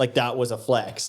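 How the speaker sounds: ordinary talk, nothing marked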